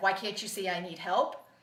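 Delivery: ordinary delivery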